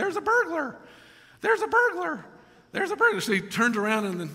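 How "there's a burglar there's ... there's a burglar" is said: tiny, very high little parrot chatter. Telling a joke, voicing the parrot that calls out: little parrot voice. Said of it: "he hears this little voice going".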